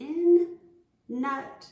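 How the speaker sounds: very loud, nose-held nasal voice on "in, nut". Showing a listener how to say it while holding the nose. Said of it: "try to hold your nose like me".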